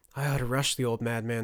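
ordinary delivery

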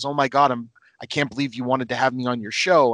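ordinary talk

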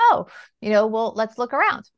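ordinary delivery

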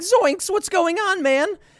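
very high-pitched cartoon voice. Retelling a game commercial where Shaggy speaks: imitating Shaggy. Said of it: "And Shaggy's like".

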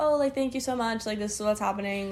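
ordinary talk, nothing marked

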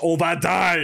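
half-shouted, mild yell in French. Recounting waking up and seeing a guy yelling in french; retelling a yell in french. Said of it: "he's yelling in French".

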